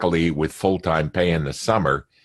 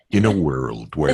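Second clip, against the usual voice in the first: lower-pitched movie-trailer announcer voice; 4 semitones lower than usual. A former radio host, asked on a conference call, doing a Don LaFontaine impression. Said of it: "Can you just say "in a world" for us?".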